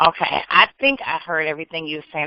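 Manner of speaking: plain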